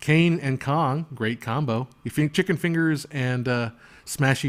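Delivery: ordinary talk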